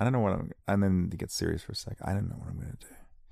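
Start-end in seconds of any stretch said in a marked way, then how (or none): 2.0-2.9 tired, weary, worn-out voice. Getting serious for a second: tired, weary voice. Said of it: "It's a tired sound. A weary sound".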